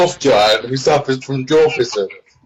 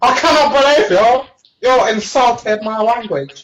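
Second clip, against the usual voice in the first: very high, indignant and outraged tone; 9 semitones higher than usual. Imagining being phoned by Kim Jong-un complaining: Kim Jong-un impression. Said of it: "rang up by Kim Jong-un going".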